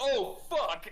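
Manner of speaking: high, full-volume shout at the top of the lungs. Playing a character about to be shot: shouting as loud as possible. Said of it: "Byron will shout, as loud as he possibly can".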